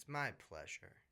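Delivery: dry, sarcastic tone. Answering thanks for joining the podcast: sarcastic. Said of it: "I sense some sarcasm".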